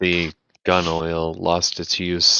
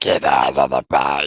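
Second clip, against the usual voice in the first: slow, dragging zombie voice; 3 semitones lower than usual. Describing a gecko that talks like a zombie, mimic it in a zombie voice. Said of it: "He all like talks like a zombie".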